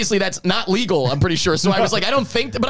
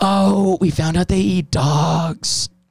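mimicked whisper; 3 semitones lower than usual. Retelling what a woman whispered in their ear while dancing, retelling a whispered remark. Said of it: "she's whispering this in my ear".

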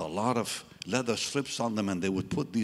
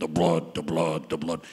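big, low preacher voice, repetitive pulpit delivery; 6 semitones lower, 4 dB louder than usual. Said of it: "He had a big voice".

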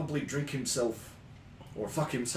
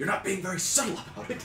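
angry reproachful scolding tone, pitched up; 8 semitones higher, 3 dB louder than usual. In a story scene, a character scolds the other, quietly angry. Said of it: "angrily but quietly is like".

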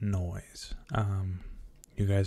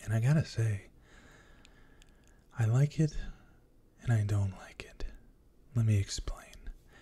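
gentle, soft, ASMR-style delivery. ASMR creator introducing a new soft-spoken video to viewers, soft-spoken voice. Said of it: "We are doing a soft spoken voice".

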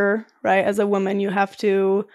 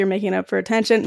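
ordinary delivery

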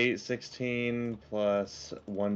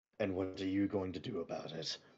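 low, mocking, taunting tone; 5 semitones lower, 8 dB quieter than usual. Voicing Demon Crow standing over someone: Demon Crow taunting. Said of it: "Demon Crow just standing over you".

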